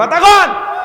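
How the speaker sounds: demanding shout, high and loud.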